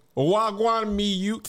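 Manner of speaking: put-on, borrowed Jamaican patois. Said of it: "[name] patois is top tier".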